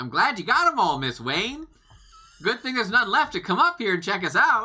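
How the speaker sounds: full-volume, very high, taunting yell. Popping out of a hiding spot to draw someone to charge up, as loud as possible. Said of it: "As loud as I can".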